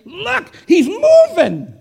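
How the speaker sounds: excited, high, loud shout with a laugh.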